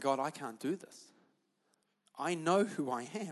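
tearful, slow crying delivery. Retelling a prayer said under a desk: retelling a tearful prayer. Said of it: "I'm sitting under my desk and I'm crying".

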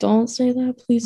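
panicky, freaked-out, frantic tone. Retelling a brother's grim joke and the reply to it, retelling freaking out. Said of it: "I'm like freaking out".

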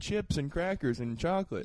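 ordinary talk, nothing marked

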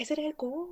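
put-on very soft voice. Quoting a film character turning down an invitation: imitating a very soft voice. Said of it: "She has, like, a very soft voice".

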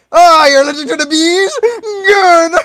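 very high, loud, evil gloating villain voice. Acting out the bee woman answering an allergic officer: gloating evil villain. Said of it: "she's like an evil villain".

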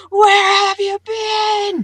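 imitated screaming voice. Imagining a character's voice in one's head: Molly Grue screaming. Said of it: "I heard Molly Gru's voice in my head screaming".

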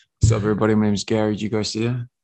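mock whisper close to the mic. Imitating the other speaker whispering into the mic on stage: imitating someone whispering. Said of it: "You were whispering, bro".

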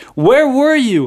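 high, loud, mad, upset, accusing tone. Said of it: "she says".

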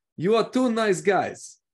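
put-on high Portuguese accent. Showing how a man from Portugal talks to them: imitating a Portuguese man's accent. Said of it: "This is how he talks".

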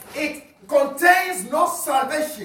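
high, loud, fervent preaching shout.

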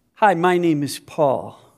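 put-on unhurried British-accented voice. Speaker retells a man introducing himself after a German greeting, imitating Paul's British accent. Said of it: "with a British accent".

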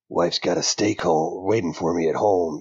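dry, gravelly voice, ground out. Imagining the comic voiced like Clint Eastwood: dry gravelly Clint Eastwood voice. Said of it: "that just dry gravel voice".

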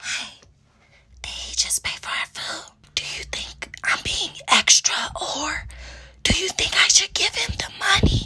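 soft, unvoiced whisper. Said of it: "So I whisper in her ear".

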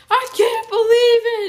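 put-on shrill yelling. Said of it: "Zoe yelling".

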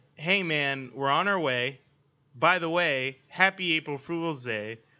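ordinary delivery

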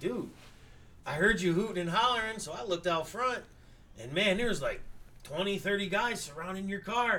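ordinary delivery

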